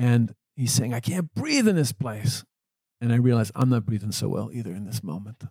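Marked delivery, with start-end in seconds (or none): 0.9-2.4 a man screaming at the top of his lungs, high, acted. Retelling a man who screamed on entering his room: imitating a man screaming. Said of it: "he's still screaming at me at the top of his lungs".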